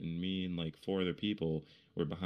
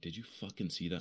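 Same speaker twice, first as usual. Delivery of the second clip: whispered, quieter; 4 dB quieter than usual. Retelling what the speaker whispered to a friend after a huge shadow emerged, whispered. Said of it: "I whispered over to one of my friends".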